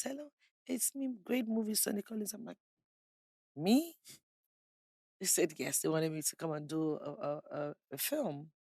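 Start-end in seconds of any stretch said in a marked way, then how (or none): 0.0-2.3 tiny, slight, high little voice. Act out the caller on the phone who wanted you for a film, imitating a man's small voice. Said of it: "He has a small voice".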